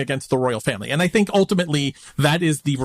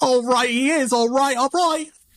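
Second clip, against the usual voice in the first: very high bad Australian accent. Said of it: "that was your accent time".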